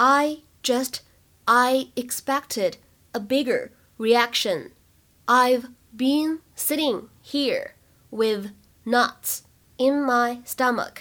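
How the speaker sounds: very slow, deliberate, careful delivery, word by word.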